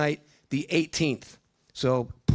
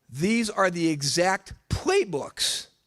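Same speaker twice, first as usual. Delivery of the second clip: voice cracks high, breaking on playbooks; 2 semitones higher than usual. Recommending books to listeners, voice cracking. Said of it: "you hear that crack in my voice?".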